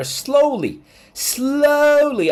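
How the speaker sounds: "slowly" slowly drawn out with heavy stress. Commenting on world economics, stressing the word 'slowly'. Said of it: "I emphasize".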